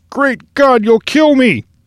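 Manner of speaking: very high, gasping for air. The seaman, choked by the captain, cries out to him, gasping. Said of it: "was gasping".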